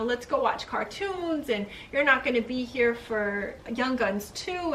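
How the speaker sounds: ordinary delivery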